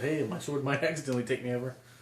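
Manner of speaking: ordinary talk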